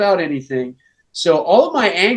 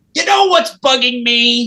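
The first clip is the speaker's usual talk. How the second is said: high, goofy, silly put-on voice; 6 semitones higher, 3 dB louder than usual. Repeating a line after being asked to say it in that voice: put-on silly voice. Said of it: "in that voice, say".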